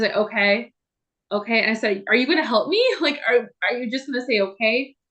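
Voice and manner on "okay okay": mock flat monotone 'okay'. Retelling a call to a crisis line, imitating the man's monotone. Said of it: "He was very monotone".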